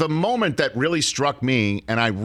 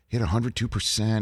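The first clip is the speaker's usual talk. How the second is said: mock muttering under breath, lower pitch; 4 semitones lower, 3 dB quieter than usual. Retelling a golfer doing math before a shot: imitating someone muttering under breath. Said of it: "you can hear him under his breath".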